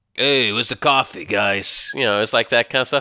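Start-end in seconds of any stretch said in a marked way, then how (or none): 0.2-1.9 low, slow tough-guy voice. Imitating how a cartoon character talks about coffee: imitating Hawkeye's Wolverine-like tough-guy voice. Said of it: "kind of voice to sound like a Wolverine, 'cause Wolverine's a tough guy".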